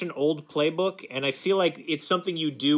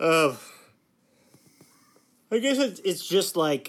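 yawning while talking, slower; 3 semitones higher than usual. Mid-conversation, the speaker trails off while yawning while talking. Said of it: "sorry, I yawned there".

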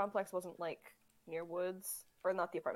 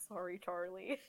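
soft, mumbled, muttered under the breath; 5 dB quieter than usual. Voicing a character catching a rat to feed on: muttering. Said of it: "Cyrus kinda, like, mutters".

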